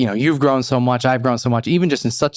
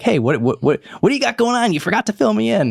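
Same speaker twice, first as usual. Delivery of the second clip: high-pitched fake woman's voice; 9 semitones higher than usual. Describing what she is always like: imitating a woman's voice. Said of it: "I feel like I did her voice there, kind of good".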